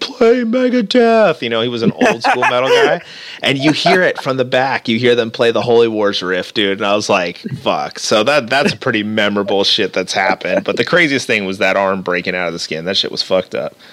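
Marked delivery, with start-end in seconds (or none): 0.0-1.4 put-on high-pitched shout, yelled. Recounting a show, the speaker retells a man yelling before the band goes on. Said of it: "he's yelling".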